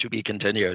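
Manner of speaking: normal talking voice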